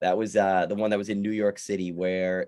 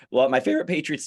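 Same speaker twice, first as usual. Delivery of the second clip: voice breaks, cracking mid-phrase; 5 semitones higher, 4 dB louder than usual. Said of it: "my voice just cracked".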